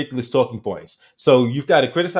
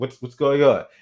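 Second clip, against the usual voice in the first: put-on super calm voice. Retelling how a debater reacts to an angry guest: super calm, imitating David Pakman. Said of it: "he does this thing where he just remains, like, super calm".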